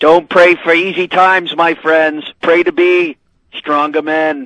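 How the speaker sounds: put-on speaking in a Massachusetts accent. A caller quotes what Kennedy once said about facing adversity, in a Kennedy Massachusetts accent. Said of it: "Nice job with the Massachusetts accent".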